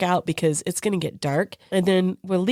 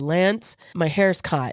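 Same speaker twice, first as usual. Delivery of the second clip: ordinary talk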